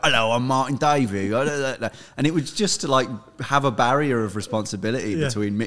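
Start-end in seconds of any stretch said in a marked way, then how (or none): 0.0-1.3 put-on rough, gruff, growled broad London Cockney accent. Speaker recalls posing as his band's made-up manager; Martin Davey gruff Cockney voice. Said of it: "I'd put on a gruff Cockney voice".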